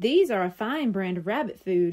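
plain reading voice

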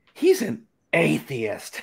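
disapproving tsk-tsk tone, word spat out, swooping. Retelling a librarian's reaction to the books he checked out: mock-spitting out 'atheist'. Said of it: "And she spit out the word".

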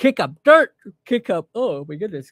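high, loud words stretched by a yawn. Telling a story about low-flying helicopters, yawning mid-sentence. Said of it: "excuse me for that yawn there".

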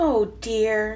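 sighing words. Flip-flop watches the sun melt his snowplane; sighing. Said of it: "sighed Flip-flop".

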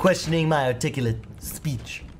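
put-on high posh baby voice. After being told the impression is not bad, the speaker continues a Stewie Griffin impression. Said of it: "Is that a Stewie Griffin impression?".

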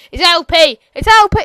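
overexcited, very loud, very slow, shrill drawn-out yelling. On a YouTube game video, the speaker corrects a term, hyper. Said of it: "I've gone a bit hyper".

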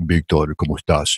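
very low, deep, smooth-as-butter voice. Imitating your Latin America mentor greeting Victor, in Jose Santana's smooth deep voice. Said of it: "He used to talk with this deep voice".

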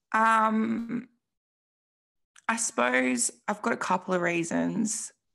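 with feeling. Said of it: "making me emotional talking about these".

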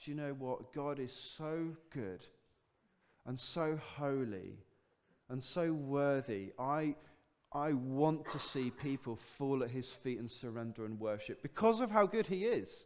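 usual speaking voice

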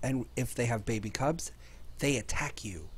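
hushed whisper. Gamer narrating a Factorio clip near a polar bear with a cub, whispering. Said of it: "The reason I'm whispering".

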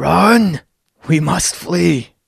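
yell in a put-on character voice. Voicing a character who sees an ally go down and yells to the group to run: in-character yell. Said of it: "he just yells at the rest of you guys".

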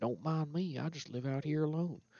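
put-on farmer-style Texas rancher accent. The player voices Linus greeting a stranger at his tent: Linus in Texas rancher voice. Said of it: "more of like maybe a Texas rancher voice".

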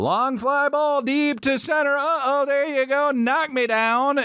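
put-on very high, drawn-out, acted drunk play-by-play announcer. Imitating a favorite announcer's home run call: imitating a drunk-sounding announcer's home run call. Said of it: "That's how I would do it".

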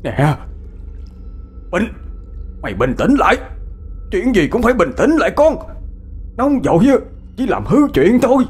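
shouting loudly. A father addresses his raging, cursing son, shouting loudly. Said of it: "Bác hai ba của Bình quát lớn".

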